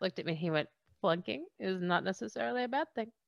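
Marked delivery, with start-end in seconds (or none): 1.0-3.1 put-on strong, heavy Indian accent throughout. Retelling what a man said about a clunking, Chetan's heavy Indian accent. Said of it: "with his amazing accent".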